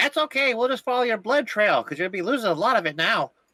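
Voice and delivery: very high, shouted, taunting jeer. Player's character yells at an enemy after a crossbow shot, yelling a taunt. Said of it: "And I'll yell at him like".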